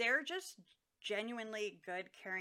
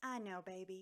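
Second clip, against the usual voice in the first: sweet Southern drawl, much quieter; 6 dB quieter than usual. Praising a woman who comforts people, quoting her in a sweet southern drawl. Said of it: "in her sweet voice and southern drawl".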